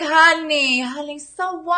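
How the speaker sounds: put-on doting New York accent. Speaker voices an imagined loving aunt from back east, in a New York accent. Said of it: "she's got the New York accent and she's like".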